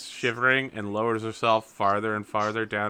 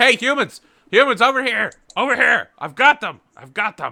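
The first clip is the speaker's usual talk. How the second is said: very high, very loud barking dog voice; 13 semitones higher, 11 dB louder than usual. Voicing a dog that calls out to the humans: dog barking out a call. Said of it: "And he begins barking again".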